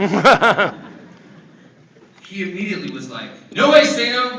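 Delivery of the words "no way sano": high, loud, angry protesting yell. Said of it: "so, earmuffs, little kids, pissed".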